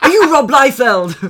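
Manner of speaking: put-on Sunderland accent. Retelling how Niall approached someone, the speaker does Niall's Sunderland accent. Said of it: "what accent is this that you're doing?".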